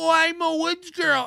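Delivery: put-on very high, simple girl voice. Admitting they can't do the impression as well as someone else, imitating a woods girl. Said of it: "I can't do the impression like Chad can".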